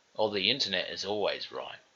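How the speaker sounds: ordinary talk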